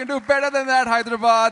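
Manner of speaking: loud, high-pitched calling out.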